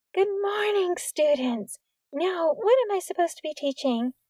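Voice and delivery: strangely high, almost falsetto voice. A woman with a clipboard greets the class: strangely high, almost falsetto. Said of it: "She spoke in a strangely high voice, almost falsetto".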